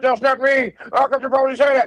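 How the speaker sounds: very high-pitched, agitated, worked-up voice. Retelling how a man denied a joking accusation, imitating a man getting excited. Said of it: "He got so excited like he was about to die".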